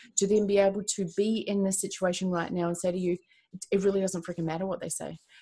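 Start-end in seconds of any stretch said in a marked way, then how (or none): none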